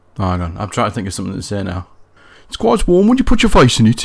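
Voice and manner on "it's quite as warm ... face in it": English Midlands accent. Trying out how the other speaker's father talks, English Midlands accent. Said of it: "a little bit more like that".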